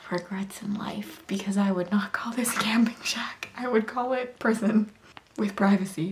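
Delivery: speaking really quietly, hushed. Vlogging from a camping shack, not wanting anyone to overhear, talking really quiet. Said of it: "I'm talking really quiet because I don't want anyone to overhear me".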